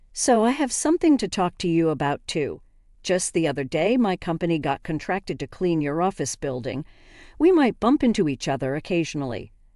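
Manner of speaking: plain reading voice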